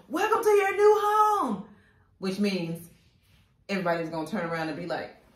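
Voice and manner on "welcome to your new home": put-on loud, very high, thrilled excited shout. Retelling how the door flew open, speaker imitates his loud excited shout. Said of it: "And it was very loud".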